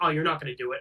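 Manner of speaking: mocking, taunting tone. Retelling how the dad taunted his daughter holding a gun: imitating a mocking taunt. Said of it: "mocking her, being like".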